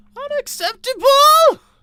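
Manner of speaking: very high, loud shrieking screech. Asked whether they can do a Lemongrab voice, trying it; high loud Lemongrab voice attempt. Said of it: "It's too high and too loud".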